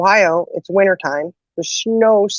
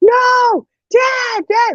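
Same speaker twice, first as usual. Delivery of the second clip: put-on very high, frantic, hysterical wailing scream. Retelling the moment dad drove off, acting out screaming hysterically. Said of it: "I start screaming hysterically".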